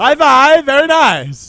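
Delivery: booming, drawn-out, very high and loud. Recalling a line always said to the girlfriend, the speaker does a Borat impression. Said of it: "I quoted Borat".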